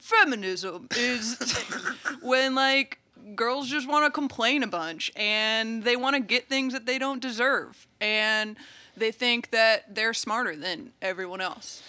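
condescending, patronising, know-it-all lecturing voice. Putting on a voice to define feminism, mansplaining voice. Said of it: "let me put on my mansplaining voice".

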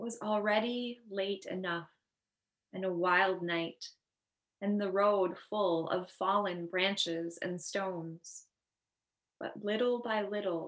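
slow, unhurried, meditative reading.

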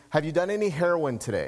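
play-acted, completely serious, no-joke tone. Retelling what a male nurse asked: imitating a dead serious question. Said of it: "And he was dead serious".

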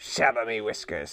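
low growled words. The old man turns on his heel to leave, growling. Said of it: "he growled".

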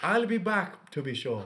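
bad fake Irish accent. Fooling around with accents, saying a line in a put-on Irish accent. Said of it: "No that's Irish".

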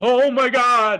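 very high, very loud, helpless, stunned outburst. Retelling a goal while everybody cheers: imitating Mickey Redmond's exclamation. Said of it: "but Mickey Redmond goes".

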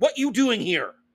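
clumsy, broken caveman English with words missing. Retelling how a film's father character talked: imitating broken caveman talk. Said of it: "it sounded almost like caveman talk".

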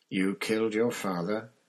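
mild-mannered, gentle tone. Reading a character's line from a novel, soft voice. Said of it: "said in the same soft voice".

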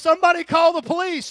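full-throated shout, high, shrill and booming. Retelling a robbery, voicing the gunman calling out for help: retelling a yell for police. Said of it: "He's yelling".

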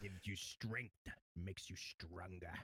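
evil emperor villain voice. Performing a requested impression for the others: Palpatine voice. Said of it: "Can you do the Palpatine?".

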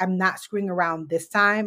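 normal talking voice

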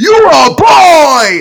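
put-on very high, shrill scream with drawn-out "boy". Retelling what they screamed in class: retelling a scream. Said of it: "And I screamed that shit in class".

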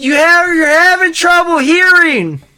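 screaming. Stuck in Candy's purse, a character screams back at a companion. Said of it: "You don't have to scream".

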